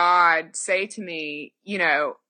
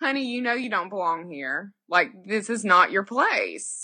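put-on Southern grandmother voice, faster. Recounting Jesus speaking from a few pews back, Jesus as a Southern grandmother. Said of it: "It was like a Southern grandmother".

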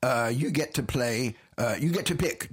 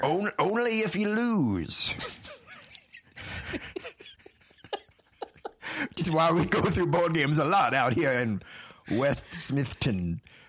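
put-on southern drawl leaning Georgia, swooping; 4 semitones higher than usual. In a board-game role-play, answering a confused visitor in a put-on southern accent. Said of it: "Your accent sounds a little more Georgia than Texas".

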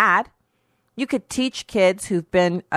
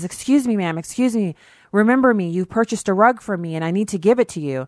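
put-on breathless man's voice; 2 semitones higher than usual. Retelling a store owner running up about a purchased rug: imitating a breathless man. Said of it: "this man runs up to me breathlessly".

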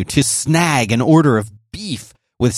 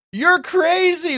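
shouted voice, much higher pitch. A cyclist recounts what one local man yelled as they pedaled past: retelling a man's yell. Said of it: "one man yelled".

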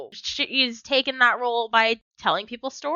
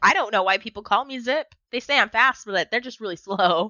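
usual speaking voice

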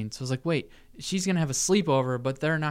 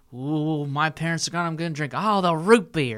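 put-on goofy, silly kid voice; 3 semitones higher, 3 dB louder than usual.

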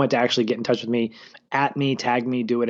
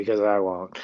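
put-on muttering under the breath; 3 semitones lower than usual. Retelling a made-up aside: imitating Aaron muttering under his breath. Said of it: "under his breath".

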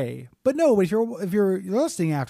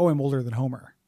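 ordinary talk, nothing marked

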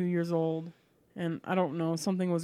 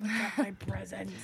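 put-on raspy, hoarse sick voice, childlike; 3 semitones higher, 4 dB quieter than usual. Speaker retelling being sick at Christmas as a small child, imitating a raspy sick voice. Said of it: "Raspy, sick voice".

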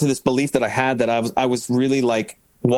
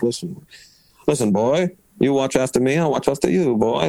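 put-on odd, weird Philadelphia accent. Retelling a friend's words on the bus: imitating a friend's Philly accent. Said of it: "That's how he talks, this weird kind of Philly, Philly way".

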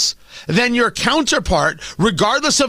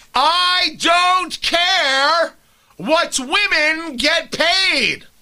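stretched out, high pitch, slow pace; 6 semitones higher than usual. Repeating a line loudly for the people in the cheap seats: screaming. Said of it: "should I scream it out".

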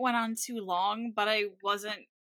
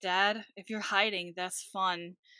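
mock bone-dry, flat monotone deadpan delivery; 2 semitones lower than usual. Retelling a scene where Bob is gone, quoting Tina: imitating Tina's dry deadpan. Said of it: "Tina very dryly going".

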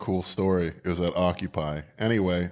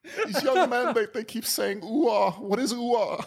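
put-on voice on the verge of crying. Doing an impression that your listener loves, use a Peterson impression, mock about-to-cry. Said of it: "right amount of about to cry in your voice".

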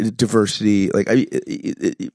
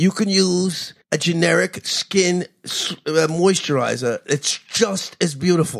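put-on old politician voice, higher; 8 semitones higher than usual. Joking about a charismatic, unattractive candidate: bad Bernie Sanders impression. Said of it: "that was a really bad Sanders".

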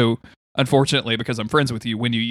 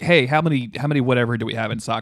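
ordinary delivery

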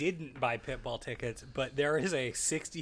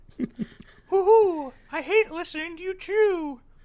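shrill, very high, loud hooting owl voice; 10 dB louder than usual. Voicing the misophonia owl on the podcast, in a hooting owl voice. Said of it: "That's a voice we need more of".

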